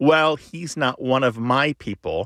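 ordinary talk

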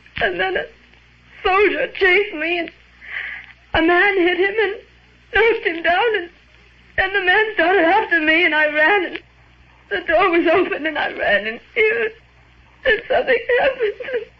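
sobbing, tearful, halting, voice breaking. Telling another speaker about being chased and running away, crying while talking. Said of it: "Could you stop crying now".

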